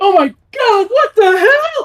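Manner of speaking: shrill, piercing scream, very high and loud. A character turns back around in a hallway and fires, screaming into the hallway. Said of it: "He screams into the hallway".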